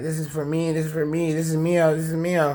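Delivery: high, sobbing, crying through every word. Retelling how she took the speaker's clothes, imitating someone crying. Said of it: "She'd be crying".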